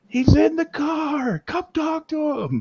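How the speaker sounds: shrill, high-pitched scream, "car" stretched out. Speaker retells a caller screaming at her husband from the car, imitating a woman screaming. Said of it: "She screams at her husband".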